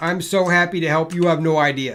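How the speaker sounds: loud voice that sounds unhappy. Answering a thanks in a game: sounding unhappy. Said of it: "Doesn't sound that way".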